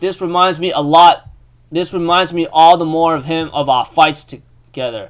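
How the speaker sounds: ordinary talk, nothing marked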